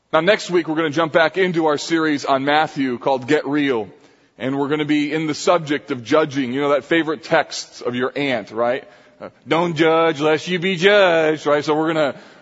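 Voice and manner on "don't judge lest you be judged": put-on, drawn-out Southern drawl. Quoting a favorite verse people throw around: put-on southern drawl. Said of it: "sorry about the southern drawl with that".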